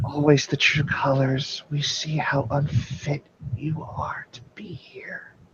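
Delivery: leaning-in scornful, sneering whisper, hushed. Voicing a character in a game who leans in to the two players: whispering. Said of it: "she'll lean in and whisper to you".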